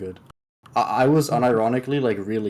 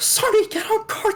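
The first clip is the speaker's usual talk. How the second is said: higher-pitched scream. Retelling what a teammate yelled in comms: imitating a teammate screaming. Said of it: "screaming at Sunny".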